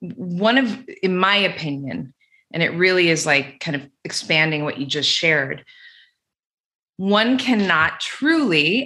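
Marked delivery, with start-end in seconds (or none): 8.0-8.9 strong punch on the word truly. Making a point to another speaker in conversation: stress on TRULY. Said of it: "emphasis on truly".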